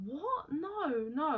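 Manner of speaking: acted crying, distraught, high tearful voice. Retelling her reply when accused of stealing money: imitating someone crying. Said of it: "And she's crying".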